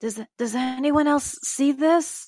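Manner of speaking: very loud stage whisper. A player's character stands, looks up at the eyes, and calls out in a loud whisper. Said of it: "call out in kind of like a uh, um, a loud whisper".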